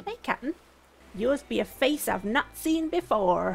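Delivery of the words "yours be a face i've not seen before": deliberately poor slow pirate voice. Reading a game character's greeting aloud in a bad Kapp'n pirate voice. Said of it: "That was a terrible pirate impression".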